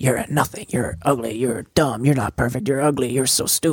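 soft, hushed half-whisper stage whisper. Retelling a movie scene where a shadow figure half-whispers insults: imitating a half-whisper. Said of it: "Shadow Mary, like, whispering, like".

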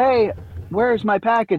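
cheerful, eager, excited. Showing two ways to read a line, the speaker reads it excited. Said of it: "Like, excited".

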